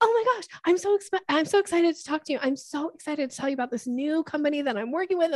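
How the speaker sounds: over-the-top, eager, high-pitched, overexcited gushing. Showing how someone sounds arriving too eager in a conversation, overexcited gushing. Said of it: "dog calling energy".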